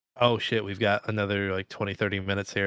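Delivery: plain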